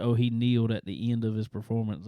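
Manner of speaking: normal talking voice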